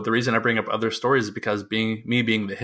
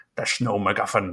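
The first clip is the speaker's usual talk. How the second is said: put-on Scottish accent. Telling a joke in a put-on Scottish accent. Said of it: "I'll have to work on that Scottish".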